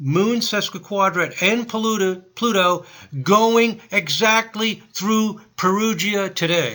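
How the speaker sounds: thrilled, loud, excited near-shouting exclamation. Speaker reading transiting planets on a chart, yelling excitedly. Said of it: "Sorry if I'm yelling".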